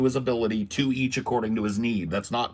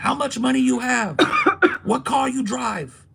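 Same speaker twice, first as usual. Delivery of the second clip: very high, shrill, loud put-on Chinese accent; 12 semitones higher, 5 dB louder than usual. The speaker retells a woman's impersonation of city people: imitating her thick-accented impersonation. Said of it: "she does this impersonation".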